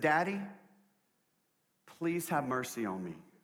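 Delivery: bawling, tearful crying voice. Retelling a daughter's plea to her father: imitating a crying daughter. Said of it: "She's bawling, crying".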